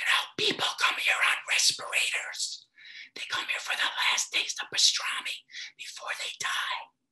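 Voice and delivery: hushed, whispered, confiding voice. Retelling what a deli owner in Boston said: imitating a whisper. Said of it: "she whispered to me".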